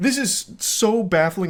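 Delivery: high voice cracking and breaking up in bafflement. Reacting to a man's text messages, so baffled the voice cracks. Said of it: "it's making my voice crack".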